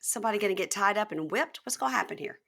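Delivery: ordinary talk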